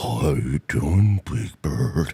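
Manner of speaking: very low, dropped-down puppet voice. Joking about sounding slowed to half speed: Mister Snuffleupagus voice. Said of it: "Make me sound like Mister Snuffleupagus".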